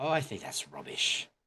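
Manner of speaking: put-on British accent. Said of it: "in British".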